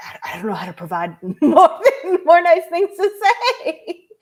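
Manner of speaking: high-pitched laughing gush while talking.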